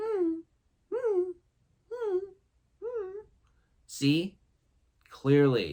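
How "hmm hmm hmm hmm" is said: very high little canine whining whimper. Explaining how dogs ask to go out, imitating a whimpering dog. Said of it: "they'll whimper".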